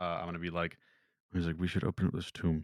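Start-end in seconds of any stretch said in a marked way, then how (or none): 1.6-2.6 whispering as quietly as possible. Sending a secret message to Isaac during the game, whispering. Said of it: "I'll whisper it".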